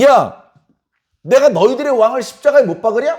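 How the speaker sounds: sarcastic mocking sneer, high-pitched and loud. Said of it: "비꼬고 조롱하는 듯한 말을".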